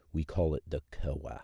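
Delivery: very dry, flat, acted deadpan delivery. Retelling a marketing rep's correction at the range: imitating a dry tone. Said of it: "says in a very dry tone".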